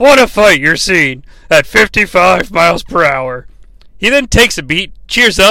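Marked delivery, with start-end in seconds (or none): 0.0-3.5 slightly deflated, a little sad commentator voice. Retelling a wrestling commentator's line, imitating Bobby Heenan sounding sad. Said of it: "Bobby the Brain Heenan kinda sounds a little sad".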